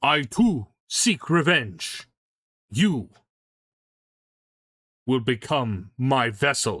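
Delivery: very slow, looming, mean, villainous genie voice. Voicing a genie who threatens to possess a player: voicing the mean genie. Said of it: "he's a meanie genie".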